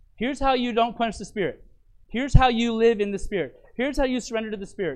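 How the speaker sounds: plain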